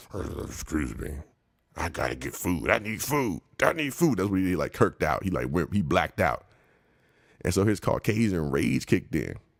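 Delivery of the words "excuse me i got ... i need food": slow, repeated, barely articulated mumble. Retelling how a man mumbled an apology: imitating someone mumbling. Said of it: "he mumbles".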